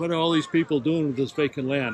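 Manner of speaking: plain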